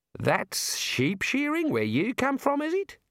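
astonished disbelief, voice pitched very high. Narrator reading a shearer who watched Rincewind, in a stunned voice. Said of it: "in a stunned voice".

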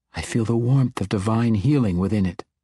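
ordinary delivery

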